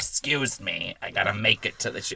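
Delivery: loud, hammed-up, put-on little old lady voice. Retelling how a woman started acting like an old lady, in a put-on old lady voice. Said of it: "her old lady voice is great".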